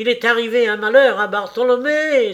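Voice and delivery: high, loud, terrified cry. Narrator voices Thaddeus Sholto bursting out of the house, crying out in terror. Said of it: "s'écria-t-il".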